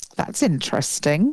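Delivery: fake-interested, insincere, polite put-down tone. Retelling how the mother reacts to something: imitating mum's insincere tone. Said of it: "in that tone".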